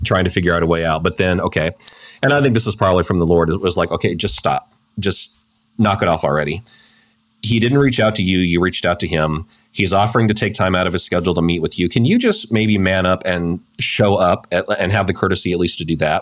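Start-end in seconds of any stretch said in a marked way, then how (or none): none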